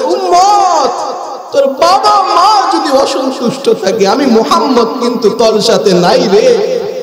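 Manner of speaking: impassioned, high, fervent preacher-style shout.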